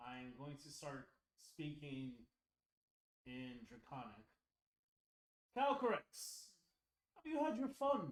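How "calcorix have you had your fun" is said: put-on Scottish accent, pitched up. Speaking in Draconic to the dragon: accidental Scottish accent. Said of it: "I made him Scottish".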